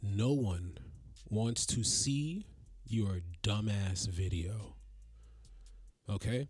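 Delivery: slow, nice and clear, every word spelled out. Announcing a slowdown before a message to everybody: slow and clear. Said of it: "I'm gonna say this nice and clear".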